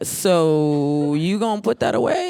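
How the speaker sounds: very slow, deliberate, drawn-out motherly voice. Imitating how a mother would read audition lines: put-on mom voice. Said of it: "she would sound like a mom".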